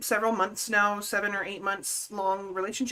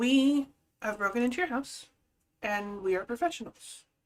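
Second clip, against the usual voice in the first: acted, very matter-of-fact, calm, flat, even delivery; 2 semitones higher than usual. Retelling what a man's voice said at three in the morning: imitating a calm, matter-of-fact voice. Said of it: "Very calm, very just matter of fact".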